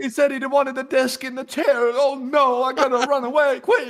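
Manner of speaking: put-on Italian-sounding accent, very high and loud. Playing Dracula being run off by Hot Dog Man: Dracula voice, sounding Italian. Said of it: "I sound Italian. I don't really even sound like Dracula".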